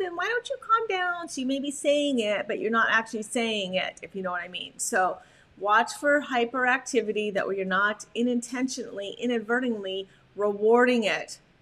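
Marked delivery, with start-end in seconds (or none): 0.2-1.3 put-on high-pitched, cooing baby talk. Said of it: "we don't want a baby talk".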